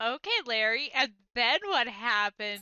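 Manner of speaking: sarcastic, feigned eager interest. Retelling how a game character answered Larry: imitating Maya's sarcastic fake interest. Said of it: "I could read the sarcasm".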